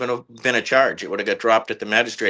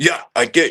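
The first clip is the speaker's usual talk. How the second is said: put-on combative, confrontational, aggressive, blunt delivery; 4 semitones higher, 3 dB louder than usual. Retelling a confrontation, quoting the other person's reply: imitating someone getting aggressive. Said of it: "immediately got all aggressive and was like".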